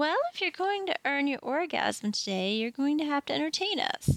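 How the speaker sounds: sweet, angelic voice. Retelling what Miss Rachel said when she chimed in, imitating Miss Rachel's sweet voice. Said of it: "with her sweet angelic voice and says".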